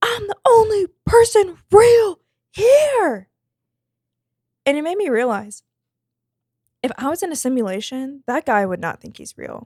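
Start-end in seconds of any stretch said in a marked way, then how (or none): 0.0-3.3 very high, unhinged, frantic scream, stretched out. Retelling what a troubled man at the store entrance did: imitating a man screaming. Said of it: "And he's like".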